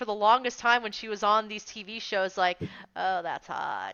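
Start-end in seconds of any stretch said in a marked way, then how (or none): 3.0-3.9 creaky vocal fry, lower, quieter and slower. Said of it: "literally talked with a vocal fry".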